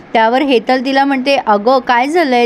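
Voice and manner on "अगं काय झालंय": ordinary delivery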